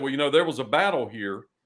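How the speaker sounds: normal talking voice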